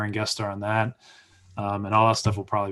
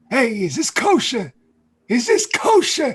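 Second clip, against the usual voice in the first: put-on loud, high, sing-song complaining old man voice; 7 dB louder than usual.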